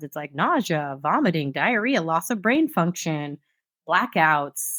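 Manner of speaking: ordinary delivery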